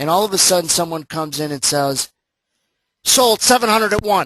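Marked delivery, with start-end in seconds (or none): 3.0-4.3 loud, high-pitched trader's yell. Showing how a pit trader sells: imitating a pit trader yelling. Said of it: "That's what they would yell".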